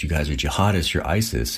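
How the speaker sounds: normal talking voice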